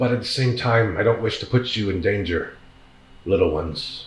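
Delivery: voice of a great dragon. Voicing a dragon that lowers its head toward the players: voicing the dragon. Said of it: "turns his head with the sword towards you".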